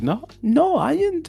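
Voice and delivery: put-on very high, drawn-out, slow semi-British accent. Streamer acts out Kitty's reaction to Zax, imitating Kitty's semi-British voice. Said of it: "I can't even do the voice".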